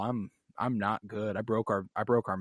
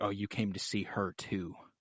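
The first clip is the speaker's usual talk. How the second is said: imitated disgusted woman's voice, quieter; 6 dB quieter than usual.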